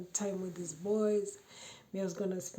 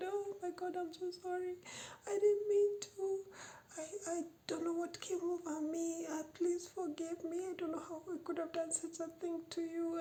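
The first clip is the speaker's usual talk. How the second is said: mock tearful, pleading crocodile-tears tone; 10 semitones higher, 4 dB quieter than usual. Retelling a partner's apology with crocodile tears: imitating a fake tearful apology. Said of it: "he shed crocodile tears and said".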